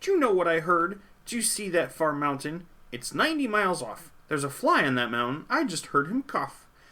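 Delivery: loud boastful voice. Narrator reading a story, the rabbit speaking to the bear: boastful rabbit's voice. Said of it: "The rabbit felt mighty important that day, on top of the hill in the sun where he lay. He felt so important up there on that hill that he started in bragging, as animals will. And he boasted out loud".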